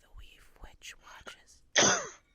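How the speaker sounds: loud, breathy stage whisper. Voicing a younger voice ringing in a player's head: whisper. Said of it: "as you hear almost in a whisper".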